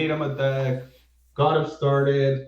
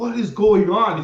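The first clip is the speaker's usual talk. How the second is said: mock confused, bewildered yelling; 4 semitones higher than usual. Retelling how a friend shouted in bewilderment at a game going wrong, imitating confused screaming. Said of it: "He's like screaming".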